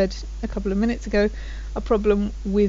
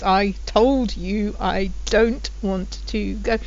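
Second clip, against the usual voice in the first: very slow, word-by-word, furious. Saying it after already saying it once or twice, very angry. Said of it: "you can also say it when you're very angry".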